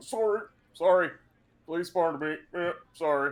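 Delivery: sheepish, apologetic elephant-folk voice. Voicing a Loxodon squeezing through crowds: apologetic Loxodon voice. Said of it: "a Loxodon who's currently having trouble trying to navigate".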